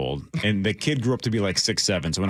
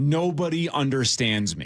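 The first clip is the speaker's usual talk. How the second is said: put-on high, crying child's screaming wail of complaint; 6 semitones higher than usual.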